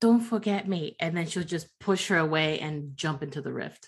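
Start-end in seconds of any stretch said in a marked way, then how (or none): 0.0-0.9 close, intimate, soft half-whisper. In a role-play, a character hugs Hibiki tightly before jumping into the rift: half-whispering. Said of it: "just whisper in her ear".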